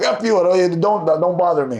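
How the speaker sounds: plain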